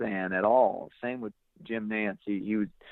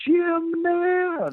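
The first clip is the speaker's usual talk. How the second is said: very high, loud excited scream; 6 dB louder than usual. Retelling shouting a name across a gym: retelling own scream. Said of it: "And I just scream".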